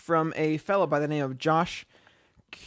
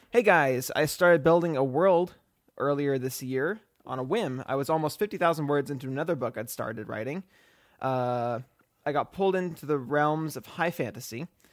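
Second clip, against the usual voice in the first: ordinary talk, nothing marked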